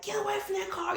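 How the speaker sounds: mock, very high-pitched, urgent yelling shout. Retelling yelling at people near a burning car in a parking lot, retelling a yell. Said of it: "and I'm yelling like".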